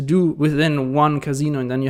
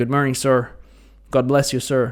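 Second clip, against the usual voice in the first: imitated American accent. Retelling what strangers said on the street: imitating an American accent. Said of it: "with this American s-, uh, accent".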